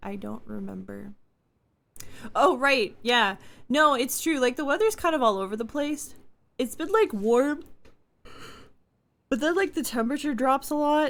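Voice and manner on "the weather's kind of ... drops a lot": fast, higher-pitched speech through a yawn. Chatting about the weather while tired, yawning while talking. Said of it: "Sorry, I'm yawning".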